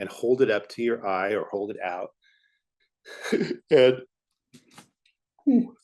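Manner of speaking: mid-yawn. Giving drawing instructions and apologizing to the guys, yawning. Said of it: "I don't know why I'm yawning so much".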